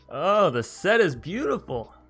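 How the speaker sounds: very loud, high voice that cracks. Playing Lotus Cobra and swinging in, voice cracking. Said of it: "sorry for the voice crack".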